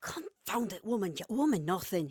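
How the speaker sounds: furious hushed hiss under the breath. A standing man answers a woman, grieving people in the room: hissed, voice kept low. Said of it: "he hissed, keeping his voice lower".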